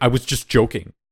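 utterly solemn, dead-serious, earnest, no-joke tone. Retelling a TV scene where Bolivia says she was joking: imitating Bolivia's very serious tone. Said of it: "in the most, like, serious tone".

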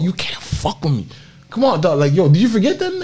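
breathy, all-breath whispered yell, hushed and taunting. Retelling a player screaming at an opponent: imitating Bradley Beal screaming. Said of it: "He was screaming at him".

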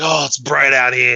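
put-on drunk Australian accent. Describing a game character dragging his team's carcasses, imitating a drunk Australian. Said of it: "like just drunk off his fucking ass".

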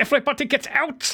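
really bad, high, barked German accent.

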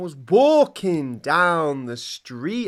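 high, very slow, stretched-out drawn voice. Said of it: "It's [name]".

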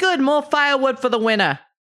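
very high, loud yelled shout. Voicing her yelling as a character walks out the door: yelling. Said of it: "she's just yelling".

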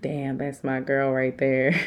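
ordinary talk

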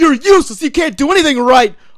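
acted-out high, berating yell. Retelling how the boss treats his son: imitating someone yelling. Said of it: "he's yelling at him".

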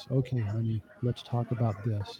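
hushed, soft, low, very quiet voice. Showing how to talk when you feel triggered: soft, lowered voice. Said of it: "you go down to level two. You intentionally lower your voice. And then you talk like this".

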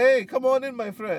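very high, happy, slow put-on Brazilian accent. Imitating a cheerful hotel desk clerk greeting a guest: imitating a Brazilian. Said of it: "Brazilians don't talk like that".

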